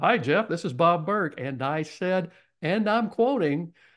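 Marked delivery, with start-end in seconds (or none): 0.0-1.3 projecting, upbeat voice with positive energy. Retelling a phone call, imitating the caller's projecting voice. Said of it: "you know how Bob's voice is. It projects well".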